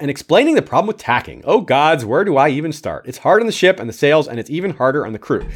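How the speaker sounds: usual speaking voice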